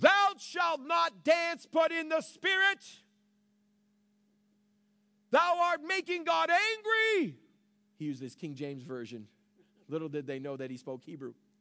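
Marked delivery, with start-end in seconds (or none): 0.0-7.4 boisterous, booming, thunderous call, very high, drawn out. Retelling a man who stood up during a worship service: boisterous, thunderous voice. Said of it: "a boisterous, thunderous voice".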